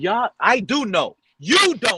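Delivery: loud, full-on shouting and screaming, insistent. Arguing about an offensive line with another speaker, screaming. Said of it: "just scream at me".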